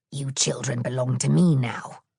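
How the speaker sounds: low, hissing witch voice. Narrator voicing the old woman speaking to Hansel and Gretel, hissing witch voice. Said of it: "she hissed".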